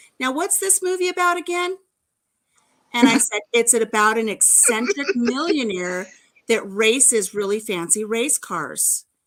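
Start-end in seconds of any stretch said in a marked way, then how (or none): 0.2-1.8 loud, pitched-up voice projected to carry far. Retelling what the speaker's hubby said in the theater, retelling a loud remark. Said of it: "says real loud so that the people around us can hear".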